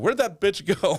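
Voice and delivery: high, loud hollering. Retelling confronting a worker in a store: imitating his own yelling. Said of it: "The first thing I started yelling".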